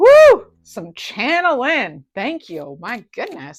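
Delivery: very loud, booming, high, swooping whooping yell. The speaker, carried away after some channeling, yelling into the mic. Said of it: "Sorry I'm yelling into the mic".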